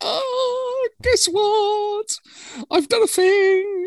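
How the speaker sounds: put-on very high, excited, slow, drawn-out "oh". Telling listeners how Jimmy joined the recording, imitating excited Jimmy. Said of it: "He's all excited".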